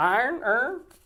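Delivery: "iron" in Baltimore accent, pitched very high. Repeating the word iron to answer a question, in a Baltimore accent. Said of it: "That was a Baltimore accent".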